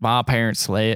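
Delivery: caricatured, mock Southern voice impression. Retelling what the character says in a film: imitating his Southern voice. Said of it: "This is this guy's voice".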